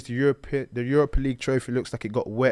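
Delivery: normal talking voice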